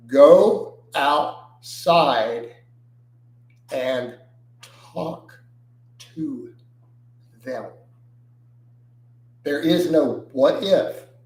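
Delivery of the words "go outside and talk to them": very slow, halting, broken into pieces. Reiterating advice in answer to a viewer's question: said very slowly. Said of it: "I'm gonna say it very slow".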